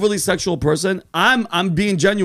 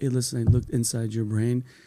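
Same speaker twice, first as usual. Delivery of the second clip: soft, soothing put-on voice, lower and quieter; 8 semitones lower, 8 dB quieter than usual. Imagining a surgeon giving bad news: Ben Carson voice. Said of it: "Ben Carson's voice".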